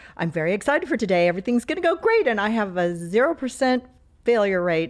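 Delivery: mock chipper, bubbly, perky, upbeat cheerfulness. Retelling a doctor jumping into the elevator: imitating a perky doctor. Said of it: "he was all perky and he's like".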